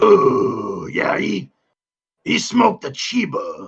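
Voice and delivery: put-on drunk character voice. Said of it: "That was drunk, unfiltered Watto".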